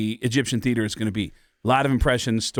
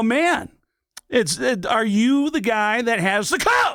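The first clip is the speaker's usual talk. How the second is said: very high pitch with drawn-out, stretched words; 11 semitones higher than usual. Showing how they talked to friends like a comedian: Sam Kinison impression. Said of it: "I'd talk to them like Sam".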